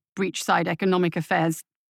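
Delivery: ordinary delivery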